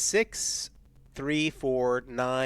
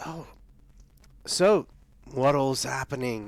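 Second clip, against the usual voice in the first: smooth, charming, ingratiating, diplomatic friendliness. Playing a character who approaches a group of people: diplomatic, charming tone. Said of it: "just trying to be as diplomatic".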